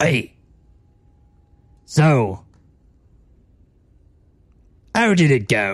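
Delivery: put-on very slow, dragged-out old pirate drawl. Voicing Graf greeting the returning crew: pirate voice as Graf. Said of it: "I think it was pirate voice".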